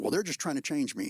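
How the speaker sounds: ordinary delivery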